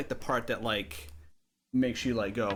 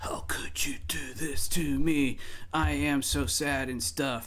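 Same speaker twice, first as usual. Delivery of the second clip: slow emo nu metal breakdown voice; 3 semitones higher than usual. Showing how a nu metal breakdown starts: imitating a nu metal whisper. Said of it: "a guy going, like, whispering".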